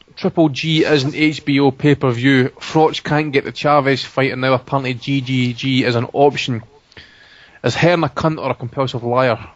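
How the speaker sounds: ordinary delivery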